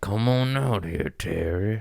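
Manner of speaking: voiced cat, angry. Retelling a comedian's animal voiceover of an angry cat: Tony Baker angry cat voiceover. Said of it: "The one with the cat looking angry".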